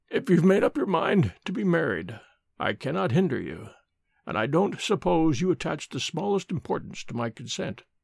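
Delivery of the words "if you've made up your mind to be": ordinary delivery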